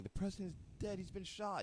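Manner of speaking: high, play-acted tearful crying while yelling. Retelling someone bursting into a gym with news: imitating someone crying and yelling. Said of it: "crying, like, yelling".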